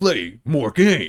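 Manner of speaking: announcer voice, like a title screen. Asked to say the phrase in the Resident Evil announcer voice. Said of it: "best play more games in the Resident Evil announcer's voice".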